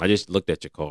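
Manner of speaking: ordinary delivery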